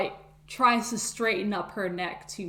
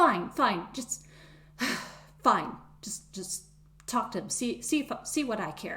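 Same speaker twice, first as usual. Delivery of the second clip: huffy, irritated hissing grumble to herself; 3 semitones higher than usual. Retelling what a woman said while shaking her head, imitating her hissing to herself. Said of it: "she hisses a little to herself".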